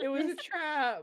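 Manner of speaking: very high, panicked, freaked-out rabbit squeal voice. Voicing a rabbit being grabbed: rabbit freaking out. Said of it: "you just hear, like, a rabbit freaking out".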